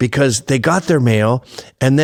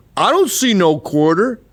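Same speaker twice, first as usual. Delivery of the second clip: put-on rural Southern twang voice, higher pitch; 6 semitones higher than usual. Acting out a skit about a redneck guard in a war movie: Boss Hog redneck voice. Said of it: "Boss Hog Redneck".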